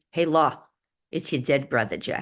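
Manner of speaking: put-on thick, broad, heavy New York accent. Speaker recalls a dead brother's voice speaking in their ear: Jeff's heavy New York accent. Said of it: "like with a heavy New York accent".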